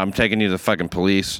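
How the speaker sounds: normal talking voice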